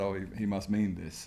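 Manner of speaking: usual speaking voice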